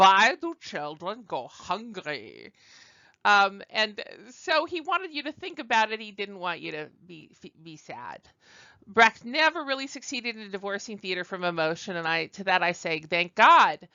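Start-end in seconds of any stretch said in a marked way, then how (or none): 0.0-2.5 put-on slow, drawling German accent with swooping pitch. Talking about a playwright's aims, the speaker voices Brecht in a German accent. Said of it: "I can't resist using the German accent for Brecht".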